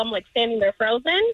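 ordinary delivery

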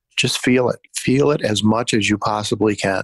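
ordinary talk, nothing marked

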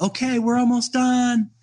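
put-on high, eager young boys' voice. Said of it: "And the boys, not me, said".

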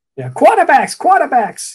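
Boston way of talking. Recalling a man who was always upset about baseball, Boston accent. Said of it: "he had that Boston accent".

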